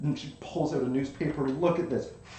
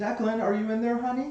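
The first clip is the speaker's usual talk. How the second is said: gentle, high-pitched effeminate voice; 7 semitones higher than usual. Retelling a scene where someone knocks at the door, nice, effeminate voice. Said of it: "it's a nice, effeminate voice".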